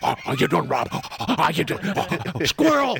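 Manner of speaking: high-pitched voice of a dog talking like a person. Speaker shows off talking like a dog, greeting Rob: talking like a dog. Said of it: "I can talk like a dog".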